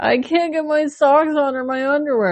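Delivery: very high-pitched, sobbing, bawling wail. Retelling own past words to a partner while bawling: retelling own bawling. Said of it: "sitting on the edge of the bed fucking bawling".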